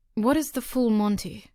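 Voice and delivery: ordinary talk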